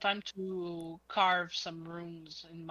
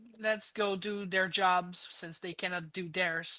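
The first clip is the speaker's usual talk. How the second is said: usual speaking voice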